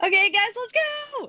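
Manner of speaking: yelling, pitched way up, shrill. Under a game rule to shout for a minute, starting everyone off: shouting. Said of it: "why are you yelling?".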